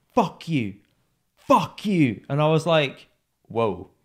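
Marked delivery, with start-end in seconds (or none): 0.1-2.2 all-out, pitched-up, full-voice scream. Telling how someone reacted to a refused handshake, retelling a top-of-voice scream. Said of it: "he screams at the top of his voice".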